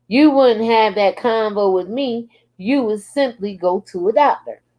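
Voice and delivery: ordinary talk, nothing marked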